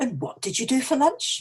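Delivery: unsure, rising on lunch. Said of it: "but you're really not sure".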